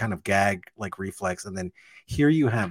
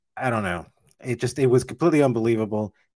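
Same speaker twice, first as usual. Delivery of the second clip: ordinary talk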